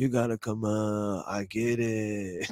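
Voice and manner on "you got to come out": soft, hushed, calmly urging tone. Retelling what another man once said to them, imitating his voice. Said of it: "In his fucking voice".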